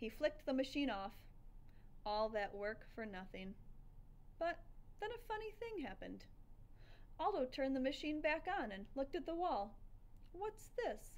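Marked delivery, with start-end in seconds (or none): 10.3-11.1 mumbled half to self, slightly higher pitch. Narrator reading a man looking at a screen on the wall, muttering. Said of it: "he muttered".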